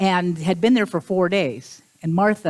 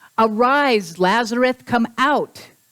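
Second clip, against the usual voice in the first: acted, firm, authoritative commanding tone; 5 semitones higher, 3 dB louder than usual. Retelling the Lazarus story, acting out the command: retelling a very loud command. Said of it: "commands in a very loud voice".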